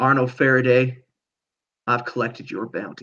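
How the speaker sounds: whispering. Narrating a scene, a voice speaks into arnold faraday's ear, whispering. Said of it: "a voice whispers in your ear".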